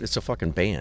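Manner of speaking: usual speaking voice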